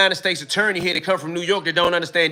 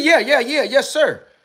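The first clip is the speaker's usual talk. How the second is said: mock stuck, fumbling, eager, pitched-up flustered voice; 7 semitones higher, 3 dB louder than usual. Acting out a driver agreeing to a police search: imitating someone stuck and flustered. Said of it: "You get stuck and you don't know".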